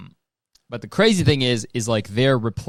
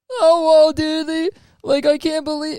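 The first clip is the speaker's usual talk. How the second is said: very high, nasal voice with stumbling words; 3 dB louder than usual. Showing how easy a Rick and Morty impression is: more nasal, Shaggy-like voice. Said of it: "it's like a more nasally, like, Shaggy".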